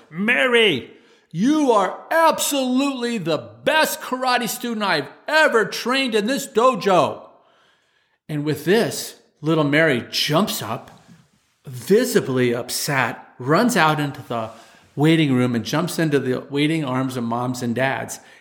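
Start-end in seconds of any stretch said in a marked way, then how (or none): 0.2-7.3 mock, very rough, high-pitched screamed outburst. Karate instructor retelling how he stood over a young student, rough-voiced scream. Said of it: "I scream at her in a really rough voice".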